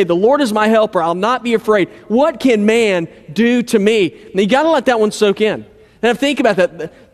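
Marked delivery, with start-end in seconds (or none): none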